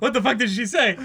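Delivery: put-on panicked voice. Acting out Taichi's rattled thoughts: Taichi's panicked inner voice. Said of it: "his panicked mind is just like".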